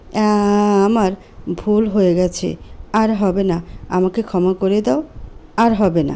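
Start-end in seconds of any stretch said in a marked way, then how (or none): none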